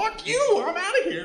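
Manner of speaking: very high, shrill, loud, tiny put-on voice. Describing a jackfruit that comes alive and sprouts legs, speaker voices it: silly jackfruit voice. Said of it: "All fruit sounds like this".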